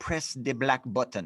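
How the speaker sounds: clumsy, horrible put-on Jamaican accent. Retelling asking a passerby to take a picture, the speaker quotes their past self in a bad Jamaican accent. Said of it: "with like a Jamaican accent".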